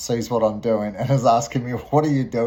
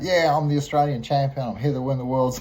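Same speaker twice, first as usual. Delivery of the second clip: put-on cocky, obnoxious boastful voice, higher; 3 semitones higher than usual. Retelling a prank on a visitor: imitating his own obnoxious bragging. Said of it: "being really obnoxious".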